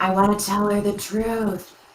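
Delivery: audible whisper. In a scene, confiding to the group in a stage whisper. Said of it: "So I'm gonna whisper".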